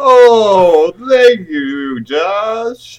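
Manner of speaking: put-on eerie, spooky voice. Answering someone's question in a group, in a spooky voice. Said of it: "Why do you sound like fucking Brother Jeb now?".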